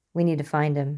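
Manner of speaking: plain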